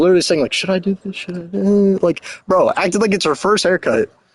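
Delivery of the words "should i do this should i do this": muttered under the breath, second-guessing. Retelling a haircut where the cutter second-guessed herself: imitating someone muttering under breath. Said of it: "I literally hear her muttering under her breath".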